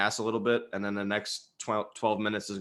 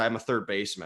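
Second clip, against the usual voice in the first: mock arrogant tone, put-on. Retelling a player's answer about where else he plays: imitating an arrogant tone. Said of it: "he said it in, like, an arrogant fashion".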